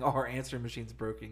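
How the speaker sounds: plain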